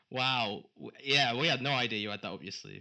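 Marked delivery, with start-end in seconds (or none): 1.3-2.8 words that come out sounding sarcastic. Reacting to a surprise reveal, sounding sarcastic. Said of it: "And that sounded sarcastic".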